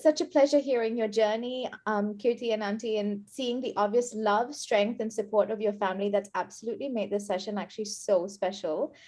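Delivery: ordinary delivery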